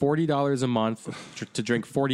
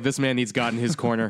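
ordinary talk

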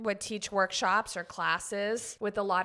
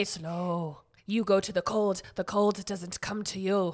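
put-on Nordic accent. Quoting the Iceman's advice, doing a Wim Hof Nordic accent impression. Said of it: "How was my accent?".

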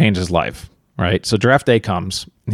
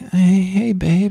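sleepy, just-woke-up sexy tone, pitched up; 9 semitones higher than usual. Speaker imitating a voicemail greeting for a friend, imitating a tired, sexy voice. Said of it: "like kind of like a tired sound like".

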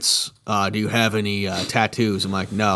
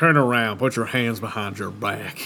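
put-on drawled Southern accent in a firm, authoritative tone. Retelling a cop catching the speaker: imitating a cop's Southern accent. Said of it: "That they had Southern accents".

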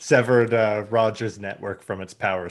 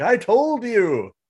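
put-on very high old geezer voice hollering; 12 semitones higher than usual. Joking about waiting to be proven right: pretend old man yelling at clouds. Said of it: "yelling at clouds".

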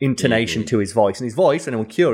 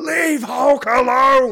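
put-on cartoon voice, pushed very high; 14 semitones higher than usual. Showing another speaker the voice actor's Hulk line: Incredible Hulk voice. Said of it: "the Incredible Hulk voice".

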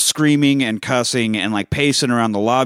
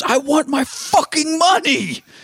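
shrill screaming, very high and very slow. Acting out how he screamed at one point while speaking in his native tongue, imitating a man screaming. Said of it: "he just screams".

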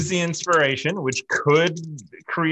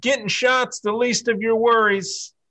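loud high-pitched yelling; 7 semitones higher than usual. During a tabletop game, a player gives their character's reply, yelling back. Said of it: "I yell back".

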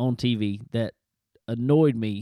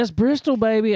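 very high-pitched, all fired up, pumped-up excitement; 11 semitones higher, 5 dB louder than usual. Retelling what a young driver said: imitating excited and pumped up. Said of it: "he's just all excited and pumped up".

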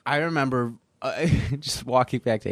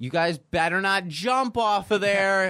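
mock woman's yell, high, drawn out and rising; 9 semitones higher than usual. Retelling how a woman on the path below yelled up: imitating a woman yelling. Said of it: "this woman starts yelling up at us".

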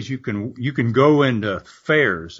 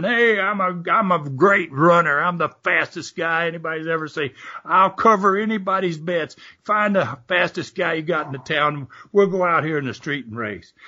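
high, brash, cocky bragging with put-on screaming; 6 semitones higher than usual. Retelling a loudmouth's challenge in a saloon: imitating someone screaming. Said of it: "he would start screaming".

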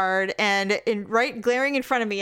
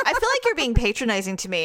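usual speaking voice

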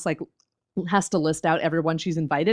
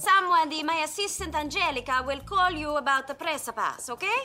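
put-on European accent, pitched very high; 10 semitones higher, 4 dB quieter than usual. Quoting a character's line in a show recap: Jenny's European accent. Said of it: "the way she pronounces press pass with her European accent".

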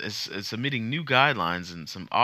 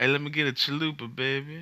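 put-on Mississippi accent, pitched up; 6 semitones higher than usual. Speaker acts out ordering a chalupa at Taco Bell, in a Mississippi pimp voice. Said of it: "That's how I talk all the time when I go to like Taco Bell".

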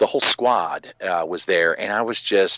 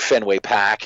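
"pack" said r-less, Boston accent. Saying Fenway Park the way they say it, with a Boston accent dropping the r. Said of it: "that's how they say it. I don't say it like that".

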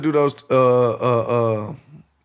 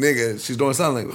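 ordinary delivery

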